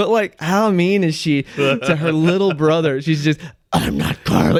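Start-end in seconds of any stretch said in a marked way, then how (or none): 3.7-4.6 very deep, low, eerie, creeping spooky voice. Retelling a sister pranking her brother in the dark: imitating sister's spooky voice. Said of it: "She did that voice exactly".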